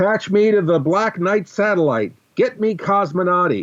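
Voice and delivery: distant, very high yell away from the mic. In a role-playing game, calling for a link to the satellite, yelling off mic. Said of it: "I'm yelling a bit off mic".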